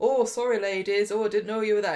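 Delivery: put-on smooth, courteous, charming, polite sudden calm. Retelling how he acts after bursting the door open: imitating someone charming and polite. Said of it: "he's charming and polite".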